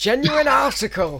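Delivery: put-on broad, full-on Bolton accent, very high-pitched. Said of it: "full on Bolton accent".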